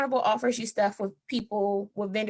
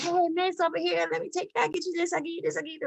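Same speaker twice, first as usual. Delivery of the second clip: put-on high, pushy, insistent hawker yelling; 8 semitones higher than usual. Retelling how locals call out to cruise visitors: imitating locals yelling. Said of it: "the locals yelling at you, like".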